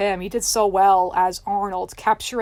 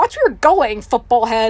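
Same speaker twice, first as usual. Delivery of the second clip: loud, full-on cartoon-style screaming; 3 semitones higher, 7 dB louder than usual. Retelling a scene where Helga bumps into Arnold: imitating Helga screaming. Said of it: "screaming at him".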